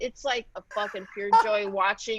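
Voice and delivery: ordinary talk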